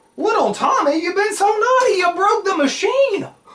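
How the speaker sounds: high, loud, mock-shocked teasing.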